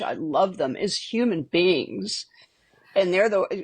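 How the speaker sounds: tearful, close to crying. In a conversation about people they love, starting to cry. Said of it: "I'm starting to cry".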